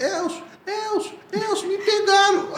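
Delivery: play-acted very high, loud shout. Telling how a companion got caught sneaking in, retelling a shout for help. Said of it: "ficou gritando assim".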